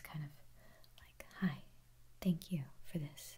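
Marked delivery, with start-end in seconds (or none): 1.4-3.4 voice set in dark, deeper register. Recalling how they sounded when starting to make videos, darker tone of voice. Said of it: "it was a little bit like darker of a tone".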